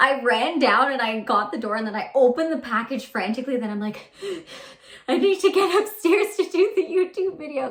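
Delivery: out-of-breath, panting, winded delivery. Back from running down for a package before a YouTube video, out of breath. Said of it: "I'm literally out of breath from running".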